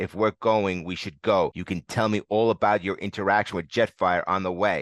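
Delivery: plain reading voice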